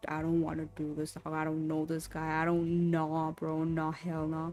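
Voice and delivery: panicky, freaked-out, protesting tone. Retelling what was said to friends while panicking: imitating own panicked words. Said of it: "I'm sitting here panicking".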